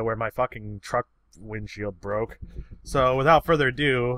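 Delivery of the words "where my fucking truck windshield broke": usual speaking voice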